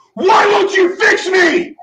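loud scream. Retelling a desperate plea to God: imitating own past screaming. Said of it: "when I was screaming".

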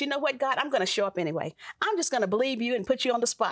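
ordinary talk

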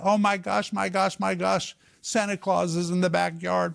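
mock, high-pitched, mild yelled outburst. Retelling how an older sister reacted to neighbor's fireworks: imitating sister yelling. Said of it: "my sister started yelling".

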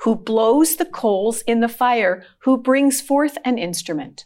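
ordinary delivery

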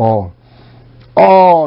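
leaning hard, heavy stress on the word all. Reading a scripture verse aloud to listeners: stress on ALL. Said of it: "I emphasize that word".

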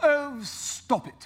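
put-on old-fashioned, archaic, solemn pronouncement. Imagining God answering the church from up there: grand King James-style voice. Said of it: "in his King James voice going".

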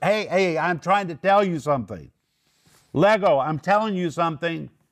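loud, emphatic, lifted voice. Explaining how Paul speaks to people in the flesh, acting out a raised voice. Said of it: "Paul's lifting his voice".

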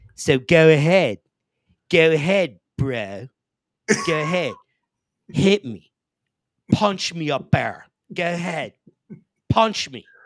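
put-on very drawn-out Philadelphia accent. Retelling a story about Mikey Fisher, imitating Stevie's Philly accent. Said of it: "I'll do the Philly accent and everything too".

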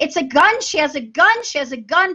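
put-on alarmed screaming, high and urgent, repeated. Recounting a dream about a shooting, retelling a scream. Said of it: "And I started screaming".

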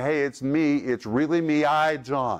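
plain

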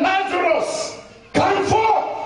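authoritative call full of anger. Preaching on the raising of Lazarus, acting out a commanding call. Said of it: "A commanding, authoritative voice".

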